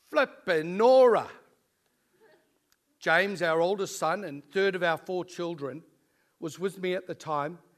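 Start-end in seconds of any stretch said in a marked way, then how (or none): 0.1-1.2 very loud, sudden, high-pitched yelled outburst. Recalling striking his thumb while his son watched: retelling a loud shout. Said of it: "I shouted out in my loud voice".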